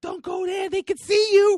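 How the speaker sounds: very high, shrill, very loud yell. Retelling a girl in a packed theater calling out: imitating someone yelling. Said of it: "you had to yell that out".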